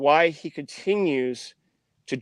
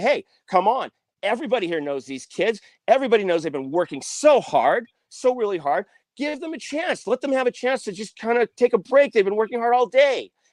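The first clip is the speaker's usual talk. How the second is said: mock, worked-up, heated, pitched-up angry rant; 7 semitones higher than usual. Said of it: "going off on the security guard".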